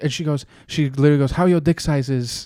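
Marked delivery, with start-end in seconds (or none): 1.3-2.5 put-on Russian accent. Retelling what a woman said in bed: imitating a Russian accent with slang.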